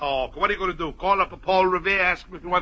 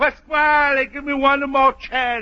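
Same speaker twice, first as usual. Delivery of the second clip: squeaky, drawn-out, slow holler; 8 semitones higher, 4 dB louder than usual. Complaining that Luigi hasn't come about his rent, imitating Luigi's squeaky hollering voice. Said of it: "that little pop squeaker voice hollering".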